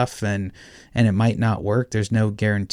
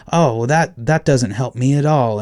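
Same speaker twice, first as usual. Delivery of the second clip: put-on frustrated tone, higher and louder; 3 semitones higher, 5 dB louder than usual. Retelling a guitar buyer's reply to a measurement: imitating a frustrated buyer. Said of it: "his tone changed to kind of frustrated".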